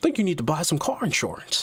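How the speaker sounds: put-on, sing-song British accent, laid on for show. Describing someone leaning in to push car insurance on you, say it in a British accent. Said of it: "with the British accent".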